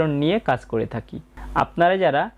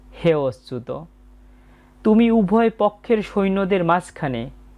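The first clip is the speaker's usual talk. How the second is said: normal talking voice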